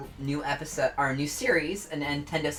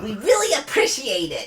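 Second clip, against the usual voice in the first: put-on cartoon bobcat voice, higher and louder; 6 semitones higher, 7 dB louder than usual. Closing out the stream when asked, in the Bubsy voice. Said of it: "close us out with the Bubsy voice".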